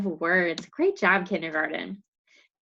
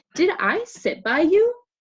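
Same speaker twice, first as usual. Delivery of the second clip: questioning rise in pitch at the end on "you"; 10 semitones higher, 5 dB louder than usual. Reading an example question to show intonation: rising pitch on final you. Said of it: "My voice goes up at the end to tell that I'm asking a question".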